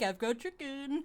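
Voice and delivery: gentle, coaxing pet-talk voice. Picturing a player calmly approaching a creature: put-on voice for talking to a dog. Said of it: "Like when you're talking to, like, a, a dog".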